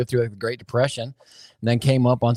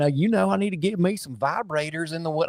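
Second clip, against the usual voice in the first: pitched-up, put-on Southern US accent; 6 semitones higher, 4 dB quieter than usual. Speaker retells a man's remark that left them laughing on camera, imitating a Southern accent. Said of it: "in his southern".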